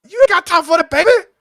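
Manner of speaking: very high, loud, belted linebacker voice. Recalling the office linebacker commercials: imitating Terry Tate. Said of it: "He'd be like".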